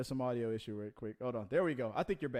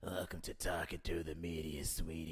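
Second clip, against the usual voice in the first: put-on very low, soft, hushed chain-smoking old lady voice; 8 semitones lower, 8 dB quieter than usual. Suggesting a character the other speaker could play, speaker demonstrates an old chain-smoking lady voice. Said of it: "the older lady that's been that's a that's a chain smoker".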